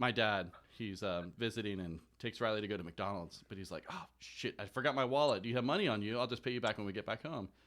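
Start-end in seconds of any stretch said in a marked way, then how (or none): none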